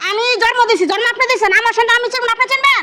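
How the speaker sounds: loud yelling. Insisting in an argument that the child is their own: yelling. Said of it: "আপনি এভাবে চিল্লান কিসের?".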